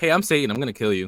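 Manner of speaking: mock offhand, calm, totally casual menace. Retelling a patient's threat in the back of a truck: imitating a nonchalant threat. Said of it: "he was mad nonchalant".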